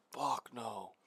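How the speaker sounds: whispered voice. A player in a tabletop game, asked whether he can see anything: whispering. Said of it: "Why are we whispering?".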